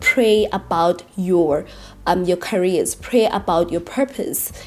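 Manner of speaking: slow, drawn-out stress on "pray". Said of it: "emphasize this".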